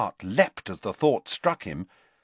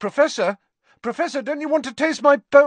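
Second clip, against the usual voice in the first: very high, raised, desperate calling voice; 5 dB louder than usual. Reading a story aloud, a character calls after a professor hurrying away, desperately calling out. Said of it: "called Harry desperately".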